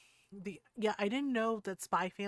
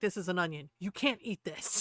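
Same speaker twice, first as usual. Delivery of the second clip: put-on stern voice. Retelling how Lloyd warned the dog about onions: imitating Lloyd sounding stern. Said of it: "Lloyd was very stern".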